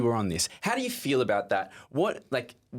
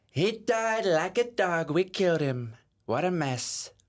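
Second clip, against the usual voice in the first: higher-pitched American accent with Brooklyn or Bronx edge; 7 semitones higher than usual. Doing an impression after being given a line to say: Donald Trump voice. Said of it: "my impersonation of him".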